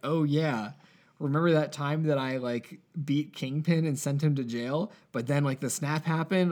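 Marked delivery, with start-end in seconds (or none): none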